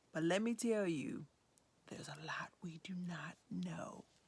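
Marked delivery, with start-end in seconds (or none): 1.9-4.1 hushed, soft stage whisper. Presenting a children's book to viewers, whispering.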